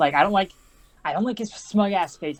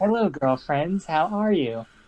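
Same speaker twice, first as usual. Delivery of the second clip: put-on flat, deadpan, expressionless voice; 2 semitones lower than usual. Retelling how she greets her friends at school, imitating a deadpan greeting. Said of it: "she tries to be completely deadpan".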